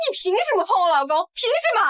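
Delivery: enraged, out-of-control, high-pitched furious outburst. Confronting her husband for touching another woman: furious, out of control. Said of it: "你冷静点".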